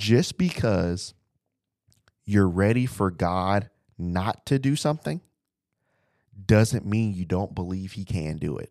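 slow, deliberate, drawn out one word at a time. Speaking to the audience so they won't miss the point, saying it slow. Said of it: "I'm going to say this slow".

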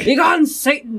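playful dramatic shout. Saying the book title Begone, Satan aloud: mock intense yelling. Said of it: "the way I said it ... Just very intense, yelling".

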